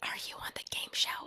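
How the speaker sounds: secretive, hushed, breathy whisper under the breath. Recounting a question once asked of a stranger, whispering. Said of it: "I'm like whispering".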